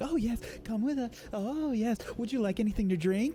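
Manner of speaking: very high, fast, pampering, fawning attendant voice.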